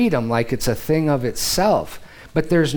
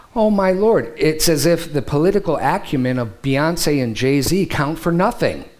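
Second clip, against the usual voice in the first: plain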